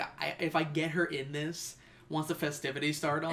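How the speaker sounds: ordinary talk, nothing marked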